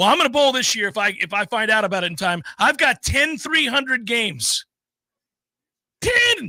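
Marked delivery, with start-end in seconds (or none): 0.0-4.6 firm, earnest, acted total conviction. Retelling a guy's boast about bowling: imitating someone speaking with great conviction. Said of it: "He said it with great conviction".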